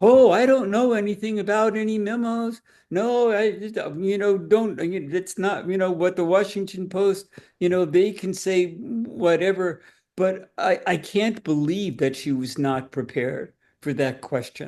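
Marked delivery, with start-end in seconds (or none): 0.0-9.8 snide, evasive, sarcastic, fumbling delivery. Retelling the trial attorney's reply about the memos: sarcastic imitation of the trial attorney. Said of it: "I'm trying to avoid sarcasm in, in my voice".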